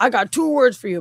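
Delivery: put-on Brooklyn accent with the edge eased off. Describing a man's Bob Hoskins impression, doing his soft Brooklyn accent. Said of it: "doing this like Brooklyn accent".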